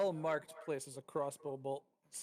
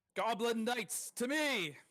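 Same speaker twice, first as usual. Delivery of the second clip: booming, high, echoing bellow; 8 semitones higher, 4 dB louder than usual. Narrator voicing a character whose shout echoes through the hall, booming shout. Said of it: "He shouts as his voice echoes booming".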